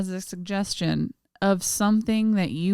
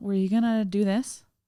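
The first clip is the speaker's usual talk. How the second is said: mock uptight, passive-aggressive tone. Imitating the other speaker's question in a tense mood: imitating an uptight, passive-aggressive question. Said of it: "an uptight".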